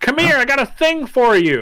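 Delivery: very high, sing-song, swooping holler. Game narrator voices a small lady calling the players over, small lady shouting. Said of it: "Small lady shouts in the hut".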